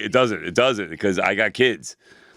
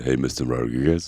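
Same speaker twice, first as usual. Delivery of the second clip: very low, sultry, sexy seductive voice; 8 semitones lower than usual. Speaker tests whether it has the same effect, saying a name in a really sexy voice. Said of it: "really sexy voice ... when I do it".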